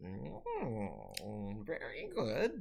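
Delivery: creature voice with sing-song swoops. Voicing several creatures talking in their strange language: voicing the creatures. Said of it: "several voices talking and saying".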